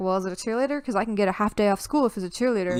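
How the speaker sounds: ordinary delivery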